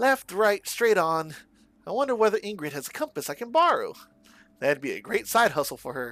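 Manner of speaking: cheerful, chipper, upbeat put-on voice. Giving a young character his own voice; chipper upbeat voice. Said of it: "that's why I'm giving him a voice".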